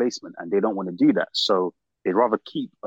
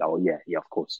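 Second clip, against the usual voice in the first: mock sarcastic, much lower and quieter; 4 semitones lower, 4 dB quieter than usual. Quoting a man's reply, retelling a sarcastic remark. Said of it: "he sarcastically said".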